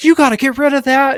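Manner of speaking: shrill, very high, pitched-way-up unhinged screaming. Retelling how an unhinged man at the driveway screamed at them: imitating a screaming man. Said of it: "unhinged guy just screaming at me".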